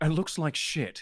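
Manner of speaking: put-on British accent, British man voice. Channeling an inner British guy while Connor is away: Connor impression, British accent. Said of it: "I'm channeling my inner uh British guy".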